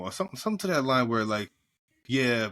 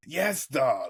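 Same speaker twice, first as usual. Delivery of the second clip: put-on old-school New York accent and cadence. Describing a guy discussed the other day, the speaker does a Harvey Fierstein impression.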